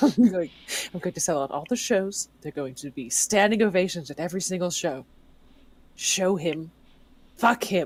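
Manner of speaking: low mutter under breath. In character as a tiefling, mumbling under your breath. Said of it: "I'm just like mumbling under my breath".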